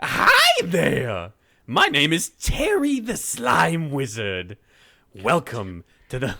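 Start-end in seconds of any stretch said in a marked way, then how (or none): 0.0-4.6 booming voice with big swoops in pitch. Bringing in a guest to introduce the topic, the speaker talks as Terry the Slime Wizard. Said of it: "so I don't have to talk like this".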